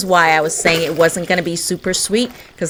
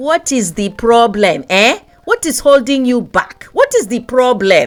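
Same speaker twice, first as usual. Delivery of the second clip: horrible put-on Nigerian accent, pitched up; 5 semitones higher, 4 dB louder than usual. A video host asks viewers why they haven't subscribed, in a horrible Nigerian accent. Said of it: "In my horrible Nigerian accent".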